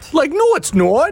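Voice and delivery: Boston accent, pitched very high. Teaching how to say a word, demonstrating a boston accent. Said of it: "So say the word in a Boston accent".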